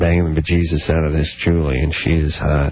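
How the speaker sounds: voice dropped low, bragging and boastful. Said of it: "Your husband says".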